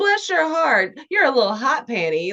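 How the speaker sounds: put-on older Southern woman voice. Imitating the older Southern ladies talking about people: imitating an older Southern lady. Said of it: "like the older Southern ladies".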